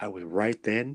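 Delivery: normal talking voice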